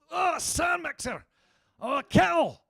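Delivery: very high, drawn-out, put-on Scottish accent. Teaching the audience a Scottish accent using their suggested word, in a Scottish accent. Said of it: "I can teach all of you to do a Scottish accent".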